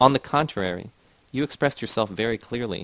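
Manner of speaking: usual speaking voice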